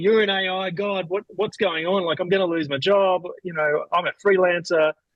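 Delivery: frantic, panicky voice. Retelling a friend's phone call: imitating a panicked friend. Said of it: "called me in a panic going like".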